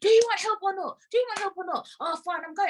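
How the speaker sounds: acted high-pitched shouting. Retelling a staff member's angry reply at a station: imitating a man shouting. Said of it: "'cause he's shouting".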